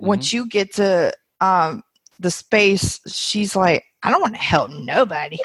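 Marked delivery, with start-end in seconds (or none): 4.0-5.4 rushed voice, rattled off fast. Telling how she answers when you say she will help so many people, impersonating her. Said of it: "that was a great impersonation too".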